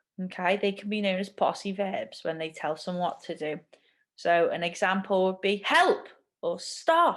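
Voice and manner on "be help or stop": short, angry, urgent, raised voice, pitched up. Explaining command sentences with examples, demonstrating an urgent commanding voice. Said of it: "You can hear that I have to change my voice".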